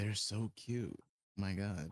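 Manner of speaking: hushed whisper. Voicing a character who leans over to V: whispering. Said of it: "leans over to V and whispers into her".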